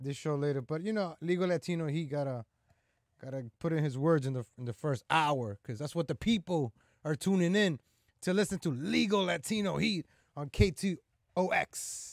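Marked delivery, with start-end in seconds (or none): 8.7-12.1 very slow, drawn-out radio announcer voice. Plugging a show segment, practicing sounding like a radio guy. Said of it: "I sound like a radio guy".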